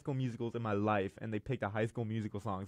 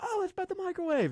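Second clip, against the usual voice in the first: very high, mock girly voice. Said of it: "And she's like".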